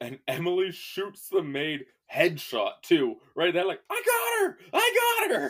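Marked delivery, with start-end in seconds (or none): 3.9-5.5 mock giddy, very high, wired, super excited. Retelling a scene where Emily shoots a maid, mock-excited as Emily. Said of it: "she's like super excited".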